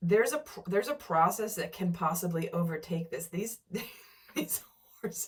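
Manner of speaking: speech breaking into giggles, laughing while talking. Describing a scene to listeners, laughing while talking. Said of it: "I'm so sorry, I'm laughing".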